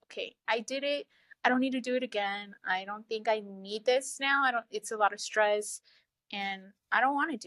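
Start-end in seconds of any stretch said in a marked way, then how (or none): none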